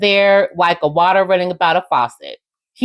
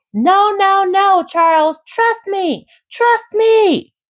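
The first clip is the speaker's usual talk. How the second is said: mock, shrill, very high, slow, drawn-out yell; 13 semitones higher than usual. Recounting an argument among several people, retelling someone yelling. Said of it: "Then Angela starts yelling".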